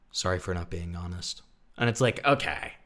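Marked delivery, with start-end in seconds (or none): 0.1-1.4 play-acted low, level, emotionless monotone. Retelling an apology said right after crying, imitating a monotone delivery. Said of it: "the monotone".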